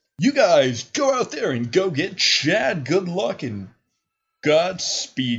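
laid-back, mellow local radio DJ voice, slow and swooping. Game master voices a radio host sending the players off, mellow radio-host voice. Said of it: "Kind of putting on the radio personality for a second. / he's kind of more subdued and kind of in his mellow stuff. / and you are Murdoch Fox, host of The Fox Hunt, / he's kind of more subdued and kin".

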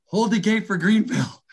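put-on high, wheezing, breathless yell. Retelling running late for a closing flight gate, retelling a wheezing yell. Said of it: "and I'm yelling".

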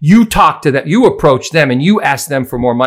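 mock angry yelled rant. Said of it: "This rant went on for thirty minutes".

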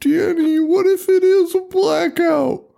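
put-on very high, slow, drawn-out panicky fussing. Retelling a movie scene where the sister panics: imitating someone freaking out. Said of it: "the sister starts freaking out".

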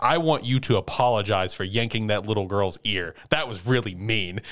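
ordinary delivery

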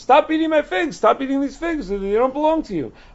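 play-acted very high, shrill hollering yell. Telling a story, voicing an orchard guard shouting at a fig thief: retelling a yell. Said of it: "he started yelling at him".

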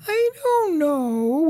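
very high, sweet cooing voice, stretched-out "no". Retelling Angie's childhood answer when asked about becoming a movie star, sweetest little voice. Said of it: "in that sweetest little voice".

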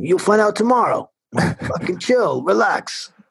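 put-on high Brooklyn accent, intercom-like voice. Retelling what a voice on an intercom told them, in a Brooklyn accent. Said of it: "It was like this Brooklyn like accent".

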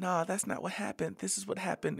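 soft, high, put-on fake British accent. Discussing a disputed story, mimicking a woman's fake british accent. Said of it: "in her fake British accent".

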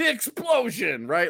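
mock sarcastic shout, very high-pitched. Speaker retells joking around as the drills start: retelling shouting nonsense. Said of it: "I'm like shouting nonsense".

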